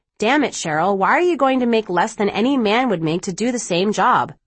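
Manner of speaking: ordinary talk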